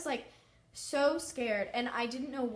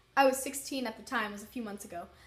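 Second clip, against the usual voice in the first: ordinary talk, nothing marked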